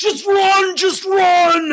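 very high-pitched, loud, slow roaring cry. Voicing a terrified centaur charging at a player: roaring. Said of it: "he runs at you roaring and he says".

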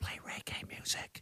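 very soft, barely-there whisper. Speaker recalls whispering to the speaker device in the kitchen, retelling a whisper. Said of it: "and I whispered".

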